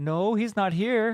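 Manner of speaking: very high, slow, clumsy fake German accent. Acting out someone answering a phone call: bad german accent. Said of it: "my German accent sucks".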